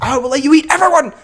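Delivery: frantic, unhinged shriek, very high and loud. Describing an actor's manic performance, imitating Tom Hardy screaming manically. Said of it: "manic and, like, screaming stuff".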